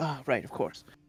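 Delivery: soft mutter under the breath, as an aside. Voicing the Baron reacting to a player's glance: under his breath. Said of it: "sort of under his breath go".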